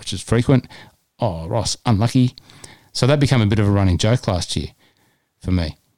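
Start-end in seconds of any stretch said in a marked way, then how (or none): 1.2-2.3 put-on unlucky said with a thick Spanish accent. Quoting someone's remark after a missed putt, in a deep spanish accent. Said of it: "in this deep Spanish accent".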